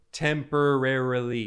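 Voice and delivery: hard stress on temporarily, drawn out slow and firm.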